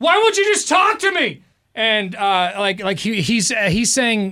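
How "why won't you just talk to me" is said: acted-out shrill, very high, hollered, pleading scream. Retelling a man in a parking lot at night: imitating a guy screaming. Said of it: "He's screaming this".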